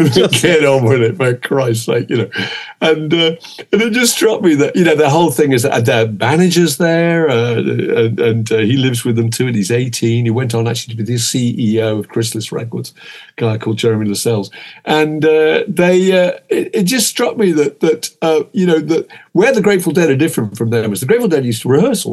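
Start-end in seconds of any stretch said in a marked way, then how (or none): 0.3-2.1 low, whiny, put-on hippie voice. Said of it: "like Neil from The Young Ones".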